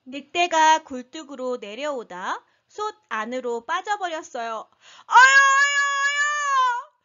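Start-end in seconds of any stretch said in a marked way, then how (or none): 5.1-6.9 yelled, much higher and louder. A wolf comes down the chimney and lands in a hot pot, yelled. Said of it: "늑대가 소리 질렀어요".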